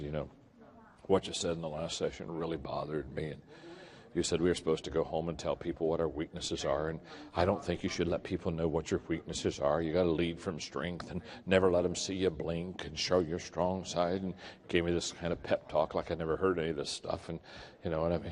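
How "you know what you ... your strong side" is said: lower, quieter whisper. Retelling what a CEO said after pulling him into a corner: imitating someone whispering. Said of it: "kinda whispers to me and".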